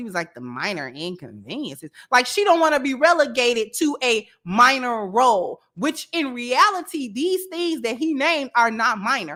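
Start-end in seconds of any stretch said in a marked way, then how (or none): 0.3-1.9 mock, dripping with disdain, dismissive tone. Retelling her reply to the things he named: imitating her disdainful tone. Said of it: "you can hear the disdain in her voice".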